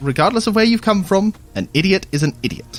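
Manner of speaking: high, loud, contemptuous, scornful tone.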